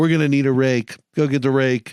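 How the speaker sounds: usual speaking voice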